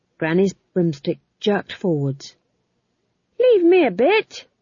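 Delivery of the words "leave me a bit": shrill, very high, drawn-out shout. Narrator reading McGrat calling to Granny mid-flight on broomsticks: shouted. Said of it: "shouted McGrat".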